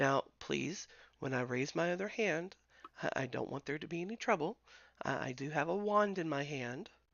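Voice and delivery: soft, calm tone. A character ordered to raise both hands tries to explain, quiet and calm. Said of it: "She quietly and calmly tries to explain".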